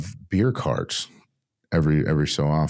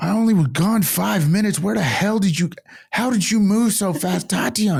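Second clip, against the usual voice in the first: put-on scream, higher pitched. Retelling a friend screaming for a lost companion while skipping lines: imitating someone screaming. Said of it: "screaming at the top of her lungs".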